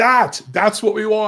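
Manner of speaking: put-on excited screaming. Picturing the fighter's corner cheering a knockdown: imitating corner men screaming. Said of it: "just screaming like".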